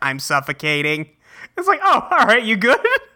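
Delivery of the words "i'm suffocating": mock computer voice, much lower pitch. Retelling a game session, speaker mimics a player's typed message in a computer voice. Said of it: "it's this computer voice".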